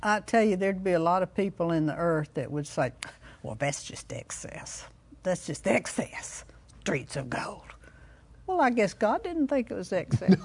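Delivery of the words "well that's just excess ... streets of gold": put-on whispered, hushed, breathy cranky old woman voice. Speaker describing what many people would say, imitating a cranky old woman. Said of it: "your imitation of a cranky old woman".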